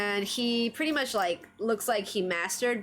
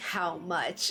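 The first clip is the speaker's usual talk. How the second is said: put-on dead-serious voice, lower; 4 semitones lower, 3 dB quieter than usual. Retelling Deku bargaining with Rhodey, imitating Deku's really serious voice. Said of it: "says it in like a really, really serious voice".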